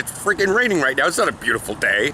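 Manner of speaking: ordinary talk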